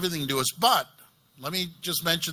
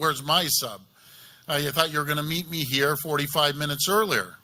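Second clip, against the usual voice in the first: fast, put-on sarcastic, jabbing tone; 2 semitones lower than usual. Retelling what he said to the mayor returning to the office, sarcastically. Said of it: "I sarcastically said".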